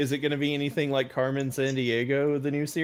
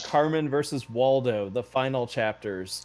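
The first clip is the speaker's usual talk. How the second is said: normal talking voice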